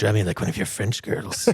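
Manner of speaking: put-on creepy, leering manner of speaking. Speaker quoting a line from Titanic, mock-creepy delivery. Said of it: "a little less creepy".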